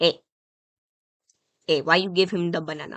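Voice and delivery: put-on Mexican accent. Retelling what an unhappy woman said, in a stereotypical Mexican accent. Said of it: "I'm gonna do a stereotypical Mexican ac- accent".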